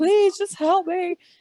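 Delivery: put-on desperate, terrified sobbing, very high. Retelling begging him for help after he slammed the door: retelling a terrified, crying plea. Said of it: "like terrified, crying".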